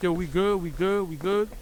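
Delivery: plain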